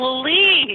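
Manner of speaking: high, loud, desperate begging voice.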